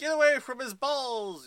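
high, loud mock heroic cry.

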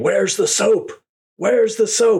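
shrill, very high, demanding scream. Retelling how a cast member walked out of the communal shower, imitating someone screaming. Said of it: "just starts screaming".

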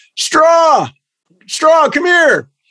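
very high hollering, yelling call. Retelling how a dad at a ballpark railing called a player: imitating someone yelling. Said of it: "my dad starts yelling".

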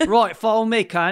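put-on Cockney accent. Voicing a dog in a game that curses a lot: cockney accent. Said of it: "really like Cockney accent".

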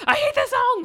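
high mock scream. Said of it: "he screams".

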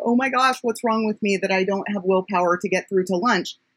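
usual speaking voice

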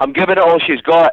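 loud Scottish brogue, pitched way up. Asked to say a line for the fans, saying it with a Scottish accent. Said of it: "With your Scottish accent".

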